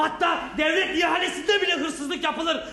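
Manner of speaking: angry shouting with a laugh.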